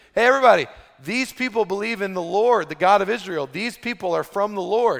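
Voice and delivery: loud calling-out voice. Retelling how a slave girl yelled at people walking by, imitating her yelling. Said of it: "she starts yelling out at Paul".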